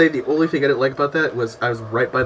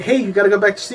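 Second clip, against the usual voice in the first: ordinary talk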